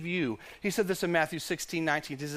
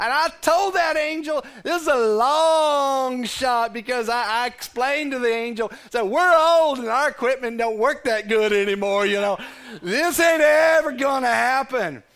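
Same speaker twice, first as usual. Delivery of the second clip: put-on voice, a little older; 6 semitones higher, 10 dB louder than usual. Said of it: "change the voice a little bit".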